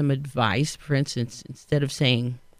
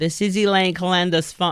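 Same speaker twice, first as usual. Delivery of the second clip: very nasal Queens accent, higher; 3 semitones higher than usual. Showing how her phone message sounds without her phone voice, nasal Queens accent. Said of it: "I'm from Queens again. And it sounds very nasal".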